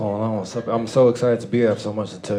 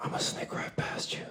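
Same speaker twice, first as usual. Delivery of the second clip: put-on old lady whisper, much quieter. Retelling what an old lady at a teacher conference said behind them, imitating an old lady whispering. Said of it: "she whispered on the back of my neck".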